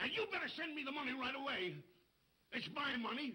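shouting. A father argues with his daughter, shouting. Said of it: "Papa, don't shout like that".

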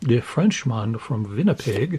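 put-on, jokey German accent. Listing old hockey players, describing one in a put-on German accent. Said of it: "That was my German accent doing the Frenchman from Winnipeg".

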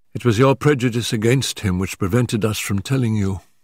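plain

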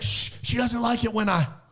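whispered, hushed shushing sound. Speaker imitates a man who shushes mid-sentence, imitating his whisper. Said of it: "he's whispering".

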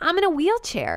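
stunned, high, shocked exclamation. A character in constant pain describes her condition: shocked. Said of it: "how shocked her voice actress sounds".

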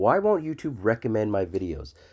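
ordinary talk, nothing marked

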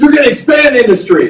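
very high, loud, bursting with excitement. A teacher demonstrating how he presents a lesson to kids: with enthusiasm. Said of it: "I'm going to tell you that with enthusiasm".

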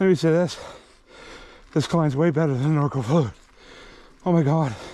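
heavy breathing. Climbing on a bike while talking to viewers, breathing heavily. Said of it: "Sorry for all the heavy breathing".

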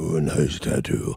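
super deep, very low bass voice. Repeating what a guy said about a tattoo: super deep-voiced guy impression. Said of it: "my impression of a super deep-voiced guy".

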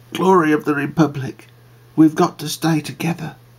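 gentle, tender, slightly high voice. Narrator reads T.M. Powell speaking to Glory of the Republic, tenderly. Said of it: "said tenderly".

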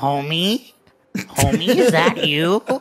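awful cartoon voice, very loud and drawn out. Adding one more thing to a judged bit: awful Marge Simpson impression. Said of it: "That was Marge Simpson".

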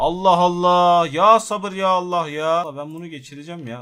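very loud, high-pitched, fed-up, irritated outburst. On stream, an item keeps failing to go through; irritated. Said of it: "Acayip derecede gıcık oldum ya".

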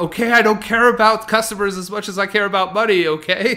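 fed-up, shrill, loud screaming. Retelling how a store manager finally snapped at a customer: imitating a scream. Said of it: "she screamed out".

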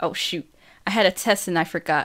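plain

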